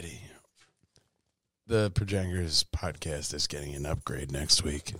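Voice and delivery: very low bass voice. Podcast host speaking to co-hosts, deep bass voice. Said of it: "never heard you talk with so much bass".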